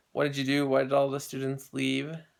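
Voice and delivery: ordinary talk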